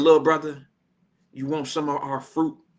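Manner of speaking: the most gentle, kindly tone. Retelling how a bodyguard offered fruit: imitating a gentle tone. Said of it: "he said with the most gentle approach".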